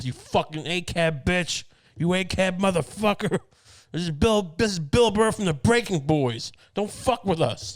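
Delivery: pretend shouting. Imagining carrying a gun and warning cops off a friend: mock screaming at cops. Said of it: "Just screaming at cops".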